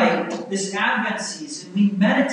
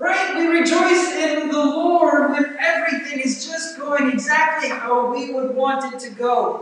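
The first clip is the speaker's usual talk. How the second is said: high, sarcastic tone dripping with sarcasm; 6 semitones higher than usual. Listing when believers rejoice, then admitting it was said sarcastically: sarcastic. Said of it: "this is just covered with sarcasm".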